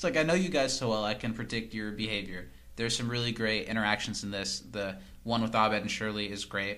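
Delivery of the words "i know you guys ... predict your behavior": usual speaking voice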